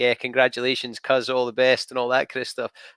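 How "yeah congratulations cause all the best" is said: plain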